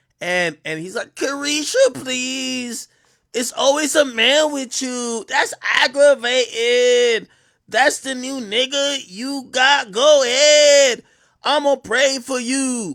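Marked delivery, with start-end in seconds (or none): 1.1-13.0 high, loud, drawn-out, exaggerated flamboyant voice.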